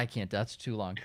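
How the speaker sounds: ordinary delivery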